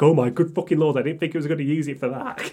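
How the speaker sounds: put-on tense shock. Retelling own reaction as a coworker shouts an insult: retelling own tense shock. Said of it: "my fucking back, like, just tense".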